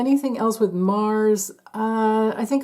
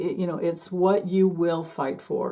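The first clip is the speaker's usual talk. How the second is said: ordinary delivery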